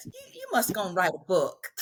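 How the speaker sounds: quick, lilting, sing-song southern dialect. A journalist repeats what a woman told her about her questions: southern dialect. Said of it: "in her southern dialect".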